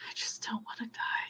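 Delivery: hushed whisper, muttered inward, almost to herself. After the answer she thought she had is snatched away, she mutters very quietly. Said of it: "very, very quiet voice, she mutters almost to herself".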